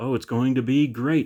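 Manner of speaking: put-on sarcastic tone. Speaker quoting how another video creator talks, retelling a sarcastic remark. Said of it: "in a sarcastic voice".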